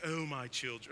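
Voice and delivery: put-on English accent. Mocking how people assume Jesus sounds in the Bible, Jesus in an English accent. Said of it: "he speaks in an English accent".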